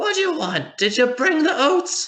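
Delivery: put-on very high little old gnome woman voice. Narrating a scene to the group, voicing a character who turns around: old gnome lady voice. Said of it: "this like old gnome lady turns around and she's like".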